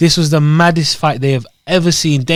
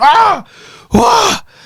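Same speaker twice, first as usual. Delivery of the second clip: very high, loud mock screaming. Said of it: "screaming, shouting".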